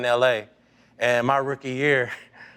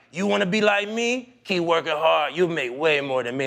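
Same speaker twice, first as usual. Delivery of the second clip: put-on Dominican accent, higher pitch; 4 semitones higher than usual. Retelling a teammate explaining a big check: imitating Rafael Furcal's Dominican accent. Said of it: "you know how Dominicans talk".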